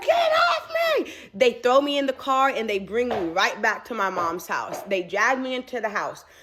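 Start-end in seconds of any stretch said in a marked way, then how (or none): 0.0-1.1 very high, frantic, panicked scream. Retelling being pinned down by brothers by the road: reenacting a scream. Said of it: "I'm screaming".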